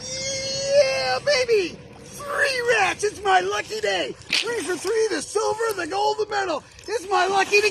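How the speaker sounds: forced, very high, fake pretend excitement. Coaching someone to look excited for the camera, the speaker shows fake excitement. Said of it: "Pretend you're real excited for once".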